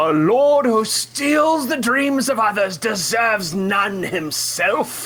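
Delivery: put-on defiant voice, pitched very high. Speaking out loud in character to a lord: character declaring defiantly. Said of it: "I say out loud".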